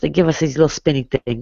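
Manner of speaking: put-on thick, heavily leaned-into Spanish accent. Retelling to friends what a relative used to say about christmas in the old days, imitating him in a thick spanish accent. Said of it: "He had a very thick Spanish accent".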